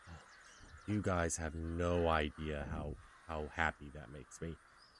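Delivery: visibly relieved, slow, unhurried delivery. Voicing a town master told that the bandits are dead, visibly relieved. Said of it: "He's visibly relieved".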